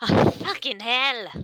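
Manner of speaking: put-on very strong, high-pitched Scottish accent, laid on thick. Narrator voices Bailey reacting in the shop, very strong Scottish accent. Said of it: "In a very strong Scottish accent".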